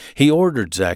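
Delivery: ordinary delivery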